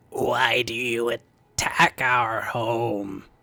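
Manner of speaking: croaked-out, croaking creature voice, drawn out. A creature slowly steps out from the fungus and speaks, croaking creature voice. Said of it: "and then it croaks out".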